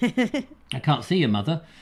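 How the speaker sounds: ordinary delivery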